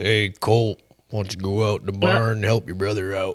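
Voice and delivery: put-on deep mellow cowboy voice. Imitating a cowboy-like man whose name they can't recall, in a deep mellow cowboy voice. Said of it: "He sounds like one too when he talks".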